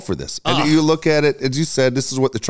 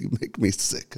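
muttered under the breath, lower and quieter; 4 semitones lower, 10 dB quieter than usual. Acting out a wife's retort in a comedy bit: Carol muttering under her breath. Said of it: "under my breath".

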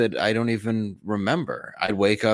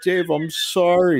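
mock very high, loud, tearful blubbering sob; 10 semitones higher, 5 dB louder than usual. Retelling how the man he was yelling at answered him: imitating a man crying. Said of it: "He's like crying".

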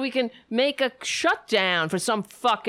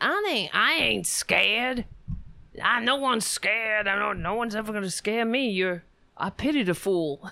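tough, brash tough-guy celebrity voice. Mocking a clip he is commenting on, in a Mister T voice. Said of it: "making him sound like Mister T".

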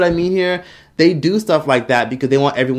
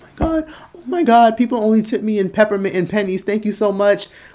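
put-on crying, much higher; 7 semitones higher than usual. Mocking people who film a waitress receiving a big tip: imitating a waitress crying. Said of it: "the waitress starts crying like".

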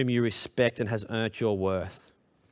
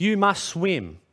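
stern, demanding yell; 7 semitones higher than usual. Comparing it to teaching a four-year-old to swim, imitating yelling at a child. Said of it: "you yell at them".

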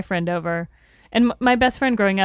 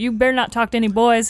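put-on Southern accent; 3 semitones higher than usual. Retelling what he used to say to her, in a put-on southern accent. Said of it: "He dropped like, the southern accent all of a sudden".

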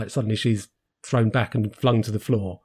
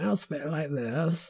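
put-on soft, creaky young woman's vocal fry; 5 semitones higher, 8 dB quieter than usual. Complaining about how people talk in a 60s-set show, the speaker demonstrates vocal fry. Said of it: "that vocal fry that young women have".

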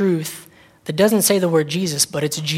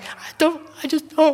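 very high, fake blubbering crying voice; 10 semitones higher than usual. Picturing oneself on a street corner not knowing how to run: pretend crying. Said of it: "can you imagine me standing there just crying".

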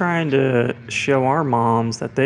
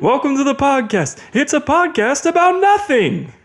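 very high, loud, punchy stand-up comic delivery; 13 semitones higher, 5 dB louder than usual. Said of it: "I sound like Jerry Seinfeld".

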